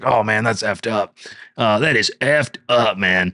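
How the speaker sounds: put-on voice of a 40-year-old man. Retelling what a guy said about Derek's girlfriend, in a 40-year-old man's voice. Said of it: "this guy sounds like he's 40 years old with the voice you're doing".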